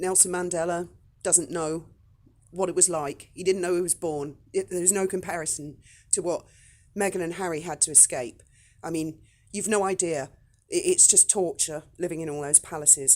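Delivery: ordinary delivery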